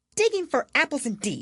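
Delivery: very high, indignant, angry exclamation. Narrating a story, reading the Rabbit's reply to Pat, angry. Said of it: "said the Rabbit angrily".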